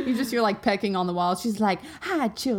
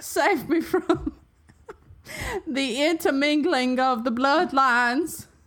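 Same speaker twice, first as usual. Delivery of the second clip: put-on Southern drawl; 3 semitones higher than usual. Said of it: "making fun of people from the South".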